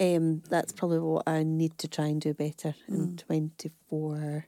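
slow, halting, unsure, hesitant delivery. Admitting what to try and do better this year: hesitant voice. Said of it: "Can you hear the hesitation in my voice?".

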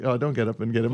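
ordinary delivery

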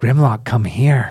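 loud, distant-sounding call. Voicing a hidden voice calling from around the corner: unseen voice calling out. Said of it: "you hear a voice go".

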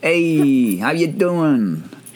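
put-on Italian mobster accent, made-man voice. Greeting the other speaker on the show, in a made-man mobster voice. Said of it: "I'm sounding like a made man out here again".

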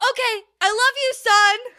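very loud, very high, shrill, full-throated, top-of-lungs yell. Telling a story about a dad calling for his son, imitating him screaming. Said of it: "Just like screaming at the top of his lungs".

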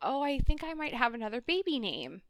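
soft, hushed half-whisper, barely any voice. Retelling what she said on the phone, imitating someone half-whispering. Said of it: "she's like whispering".

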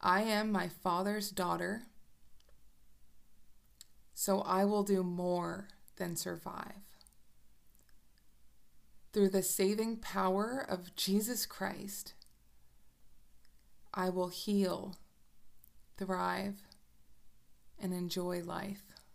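slow, deliberate, unhurried delivery. Speaker leads listeners through a declaration to repeat aloud, slow and deliberate. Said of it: "I'm going to say it slowly".

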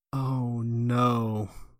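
mock muttering under breath. Speaker retells stepping out into a game's open world, retelling a mutter to oneself. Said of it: "I muttered to myself out loud".

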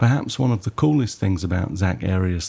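ordinary delivery

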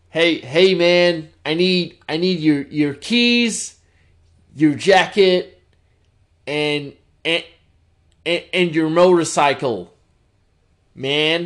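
casual American guy impression. Imagining a typical American dude delivering a Terminator 2 line, casual American dude voice. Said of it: "a typical American dude was like".

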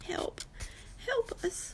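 small, tiny, desperate whisper. Narrator in a storm hears a cry for help, a tiny, desperate voice. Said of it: "It's a tiny, desperate voice".

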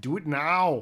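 offhand, noncommittal, tossed-off delivery. Telling listeners to go see a movie: lazy Arnold Schwarzenegger impression. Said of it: "That was a very lazy Arnold Schwarzenegger".

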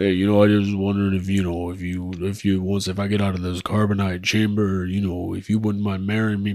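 low, hushed, soft, halting, stumbling delivery. Acting a scene as Han Solo answering "I love you": Sylvester Stallone as Han Solo. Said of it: "This will be Sylvester Stallone as Han Solo".

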